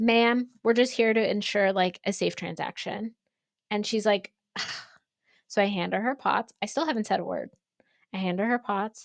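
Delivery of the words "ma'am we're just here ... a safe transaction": ordinary delivery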